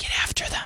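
hoarse, soft unvoiced whisper under the breath.

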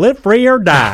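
very high, very loud, shrill Southern swagger. Retelling a teammate from Alabama answering the team motto: imitating Southern swag. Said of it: "Delivered with a Southern swag".

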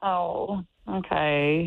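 audibly disappointed tone. Reacting to news of a gift card for a date: disappointed tone. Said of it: "straight disappointment in that tone".

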